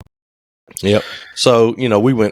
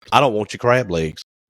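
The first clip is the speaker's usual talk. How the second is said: normal talking voice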